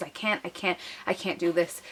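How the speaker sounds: mock sobbing, breathless, hyperventilating, repeated pleading tone. Retelling telling the nurses she couldn't go on: retelling her own crying. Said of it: "I just started crying".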